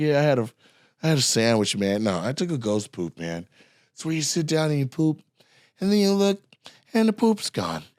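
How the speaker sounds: put-on nonchalant, offhand, casual delivery. Retelling a fellow comic's joke from a college show: John Fowler's offhand delivery. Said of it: "the way he said it was, like, crazy, like, just fix your hair and say it".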